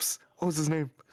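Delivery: psst-style stage whisper. Retelling forgetting a name while on stage, stage whisper. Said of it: "I like whisper".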